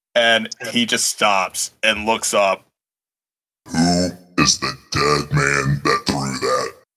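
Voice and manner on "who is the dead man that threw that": very low, hulking, brutish minotaur voice. A minotaur student confronts a halfling, hulking minotaur voice. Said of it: "So, this minotaur is up in the face of a halfling, / You see your school super senior. You don't know how old he is, but you know he's been through a senior year more than three times at this point. /".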